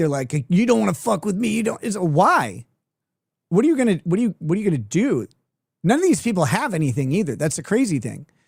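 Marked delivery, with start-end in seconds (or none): 0.5-1.8 fake mobster tough-guy voice, pitched-up, rough. Mocking how these people talk, imitating fake mafia guys. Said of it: "they all talk like fake mafia guys".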